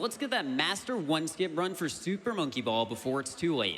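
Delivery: ordinary delivery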